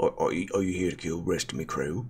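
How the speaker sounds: put-on dwarf voice with a Cockney accent. Voicing a Cockney dwarf character who questions the group, Cockney dwarf voice. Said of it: "Cockney dwarf".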